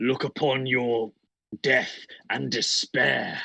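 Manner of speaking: big, booming, drawn-out giant orc voice. A player's orc calls out to everyone around him, in a booming giant orc voice. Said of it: "in my booming giant orc voice and go".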